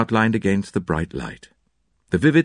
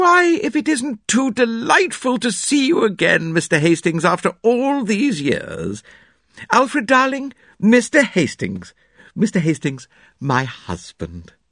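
very high, slow, gushing delivery; 11 semitones higher than usual. Narrator reading the hostess greeting Mr. Hastings and introducing her husband, Mrs. Inglethorpe's effusive greeting.

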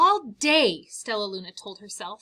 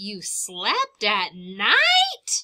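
gasping, louder and slower; 4 dB louder than usual. Narrator reads another bat questioning Stellaluna, gasping. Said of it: "Gasped another".

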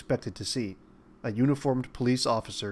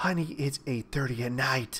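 fearful, frightened whisper. Isabella answers Quint after a knock at the door at night, fearful whisper. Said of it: "Isabella whispered fearfully".

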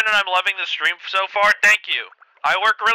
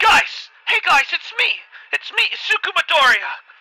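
very high-pitched put-on cartoon voice; 9 semitones higher than usual. Trying out a cartoon character voice on the spot, Deku voice. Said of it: "What if I do the Deku voice?".

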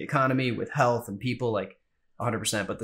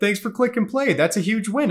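mock awkward voice, higher and louder; 10 semitones higher, 5 dB louder than usual. Retelling a first solo podcast recording: imitating own awkward podcast intro. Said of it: "I sound like that awkward, like, you know, neighbor".

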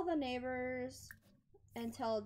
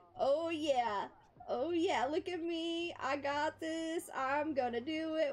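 very slow, drawn-out, put-on eager excitement; 2 semitones higher, 4 dB louder than usual. Voicing an excited game character who aced school: imitating an excited Sim. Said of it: "She is so excited".

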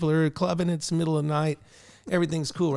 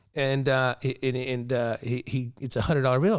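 plain

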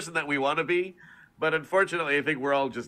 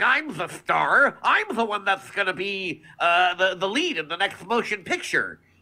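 greedy, vain cartoon cat voice, much higher, slower; 4 semitones higher than usual. Explaining a character's personality switch, the speaker shows a greedy, self-centered cartoon cat voice. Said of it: "switch the personality to being a bit more greedy and self-centered".

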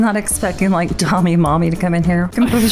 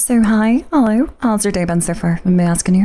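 put-on fake female girl voice. Greeting someone online and asking about their day, in a put-on girl voice. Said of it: ""I THOUGHT YOU WAS A BEAUTLFIUL WOMAN!" / Girl Voice Trolling on VRChat".

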